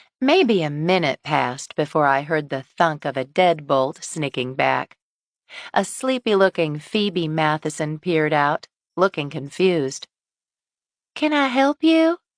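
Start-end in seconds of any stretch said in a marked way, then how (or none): 11.1-12.2 small, slight, thin, very high-pitched voice. Narrator voicing a woman answering her door to a visitor, in a small, thin voice. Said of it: "she asked in a small, thin voice".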